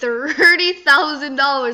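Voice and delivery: slow, loud, shocked and astonished disbelief.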